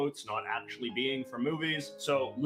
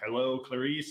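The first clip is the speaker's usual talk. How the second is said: creepy voice, put on. Quoting a famous movie line in a creepy voice. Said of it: "in this sort of creepy voice".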